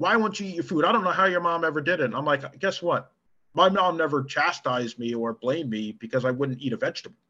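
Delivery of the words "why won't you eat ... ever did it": scolding harangue tumbling out at high speed. Recounting a woman yelling at him over food he didn't eat: imitating someone screaming. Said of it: "started screaming and hollering at me like".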